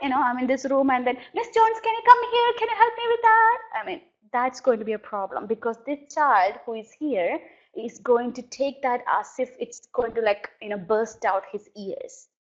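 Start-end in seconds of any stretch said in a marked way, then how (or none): 1.3-3.6 shrill, very high, loud yell. Showing how staff call a coworker from another room; yelling for a coworker. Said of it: "don't yell at them".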